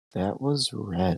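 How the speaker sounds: hushed, quiet voice. In a role-play scene, a character reacts to news: hushed voice. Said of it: "And then in a hushed voice".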